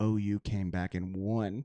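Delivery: mock whispering. Retelling telling the opener that OU came back and won: retelling a whisper. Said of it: "whisper in his ear".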